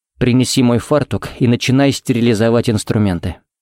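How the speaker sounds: plain reading voice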